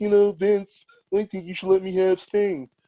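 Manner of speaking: smug wrestling boss impression.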